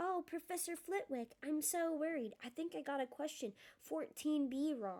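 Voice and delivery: put-on, high, mocking copycat voice. Reading Ron's line to Hermione, in a put-on high voice. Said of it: "He put on a high voice".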